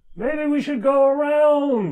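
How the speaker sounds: shrill, very high, loud man's voice. Voicing a Kenku who points the group a way, in another man's voice. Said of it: "he says in another man's voice".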